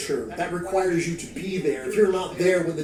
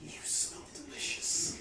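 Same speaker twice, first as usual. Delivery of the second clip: very hushed, close whisper in a creature voice; 9 semitones higher, 15 dB quieter than usual. Voicing an unseen creature close to a player's ear: whisper in your ear. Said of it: "You hear something whisper in your ear".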